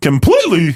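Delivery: voice breaks mid-word on completely. A speaker reporting a player's injury news: voice cracking. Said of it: "my voice cracked there".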